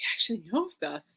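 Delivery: hushed, breathy whisper. Retelling what Olivia whispered at the concert: imitating Olivia whispering. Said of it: "she kinda whispered to me going".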